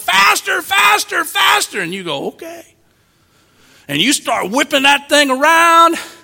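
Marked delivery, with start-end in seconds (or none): 0.0-1.8 mock high, excited kids' voices shouting with glee. Describing kids on a merry-go-round, retelling kids yelling excitedly. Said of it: "and they're yelling".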